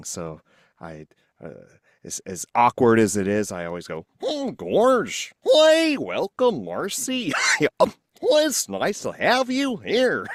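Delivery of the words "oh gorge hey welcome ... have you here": high, bouncy, cartoonish voice. Welcoming guest Marcy to the show in a Goofy voice. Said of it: "I love Goofy's voice".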